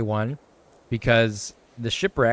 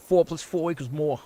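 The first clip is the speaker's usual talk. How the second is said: put-on, pitched-up Boston accent throughout; 5 semitones higher than usual. Asked to say it in a Boston accent, the speaker repeats it in a Boston accent. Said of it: "say it in a Boston accent though".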